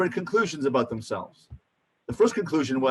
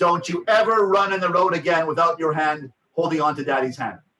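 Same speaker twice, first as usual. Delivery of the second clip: intense, forceful, raised voice; 2 semitones higher than usual. Demonstrating a parent's level three voice, very loud and intense. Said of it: "Level three voice ... It's very loud, very, very, it's very intense".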